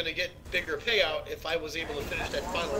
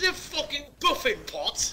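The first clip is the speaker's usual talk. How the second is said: put-on, very high English accent; 10 semitones higher than usual. Gamers joke about the word Boffin; one rants in a put-on English accent. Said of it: "The English accent".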